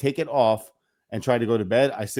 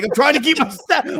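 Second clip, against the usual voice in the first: shrill, very loud, high, angry shouting; 8 dB louder than usual. Telling a golf story, acting out yelling at a man just met: retelling own yelling. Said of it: "I'm yelling at him like this".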